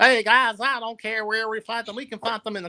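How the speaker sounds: exaggerated Southern American accent. Retelling what Brock Anderson said, in an exaggerated Southern accent. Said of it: "has a really southern accent. ... I'm going to butcher this on purpose for comedic effect".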